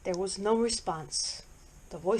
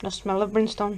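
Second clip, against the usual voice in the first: usual speaking voice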